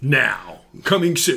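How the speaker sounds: big-screen movie trailer narrator voice. Asked about channeling an inner announcer, doing a movie trailer announcer voice. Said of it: "Movie preview guy".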